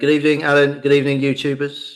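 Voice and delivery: mechanical, toneless, flat robotic monotone. Co-host returns the host's greeting to him and youtube viewers, robotic monotone. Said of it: "that was a bit robotic, [name]".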